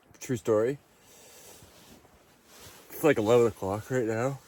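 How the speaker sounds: sleepy, yawning while talking. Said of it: "Sorry for yawning".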